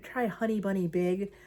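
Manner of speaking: normal talking voice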